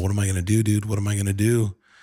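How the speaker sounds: put-on bawling, sobbing voice. Retelling a phone call to a friend after a doctor's news, reenacting own bawling plea. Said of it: "bawling my eyes out".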